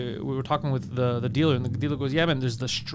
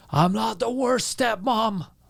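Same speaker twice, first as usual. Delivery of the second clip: mock belligerent drunk yelling, high and very drawn out; 8 semitones higher than usual. Retelling a heckle from a drunk woman: imitating a drunk woman screaming. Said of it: "she starts screaming at me".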